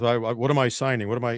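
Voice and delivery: put-on mumbling under the breath. Retelling a photo op of signing executive orders: imitating Biden mumbling under his breath. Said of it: "he mumbled under his breath".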